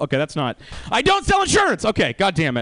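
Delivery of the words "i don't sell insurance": put-on very high, fed-up, exasperated yell. Correcting a mistaken introduction of himself: yelling. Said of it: "I thought I didn't have to yell that".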